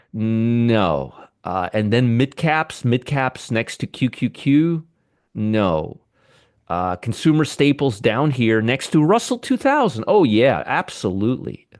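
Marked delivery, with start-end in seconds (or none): 10.0-11.5 very sarcastic, swooping sing-song. Commenting on a chart of sectors: sarcastic. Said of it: "I'm being really sarcastic right now".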